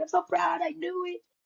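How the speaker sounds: mock teary mom voice. Recalling her proud mom taking photos of her, the speaker is imitating mom crying. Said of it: "and she's crying".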